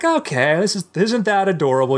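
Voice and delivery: mock patronizing, high, condescending tone. Acting out a parent praising a daughter's science project: acting condescending. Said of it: "You pat her on the head condescendingly".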